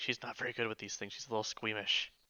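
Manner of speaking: very quiet, leaning-in whispered aside. As Rook, leaning in while she casts a healing spell; whispering. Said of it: "lean in and whisper and say".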